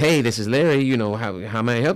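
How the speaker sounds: put-on phone-answering voice. Retelling how Larry answered the phone at work; imitating Larry answering the phone. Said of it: "Larry answered the phone like".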